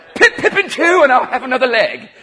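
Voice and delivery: put-on British accent. Telling a cannibal joke, doing the cannibals in a British accent. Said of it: "the cannibals are going to be British".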